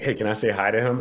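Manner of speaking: ordinary talk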